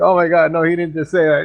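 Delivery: put-on sudden frightened reaction, scared and panicky voice. Imitating the other speaker getting scared for a minute: imitating someone scared. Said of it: "like you got scared for a minute".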